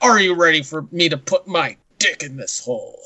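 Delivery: slow, deliberate movie-trailer narrator voice. Imitating the narrators of movie trailers: imitating movie trailer narrator voice. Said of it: "they all sound like".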